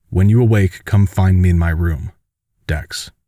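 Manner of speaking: usual speaking voice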